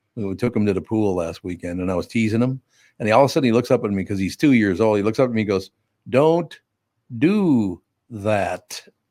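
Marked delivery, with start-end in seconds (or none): 6.1-8.8 firm, serious, stern little delivery. Retelling what a two-year-old said when teased at the pool: imitating a stern two-year-old. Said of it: "That was his stern delivery".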